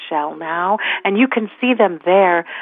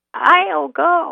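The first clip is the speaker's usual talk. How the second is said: small, rickety, very high voice; 11 semitones higher than usual. Narrating an animal fable, voicing an unseen volunteer: small rickety voice. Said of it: "said a small and rather rickety voice".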